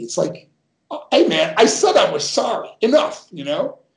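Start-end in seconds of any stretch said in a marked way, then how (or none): 1.1-3.3 fed-up, angry, pitched-up snap. Retelling snapping back after repeated apologies: retelling own angry snap. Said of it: "the switch just turns to me".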